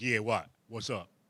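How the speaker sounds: put-on, very deep, tough-sounding voice. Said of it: "But I did the deep voice".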